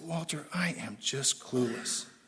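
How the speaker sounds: slow, soft, defeated, despairing tone.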